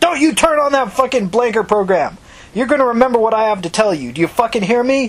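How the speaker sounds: high, forceful, demanding yell. Narrator reading a woman's line as she slaps a man and is yelling. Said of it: "Tina slapped him and yelled".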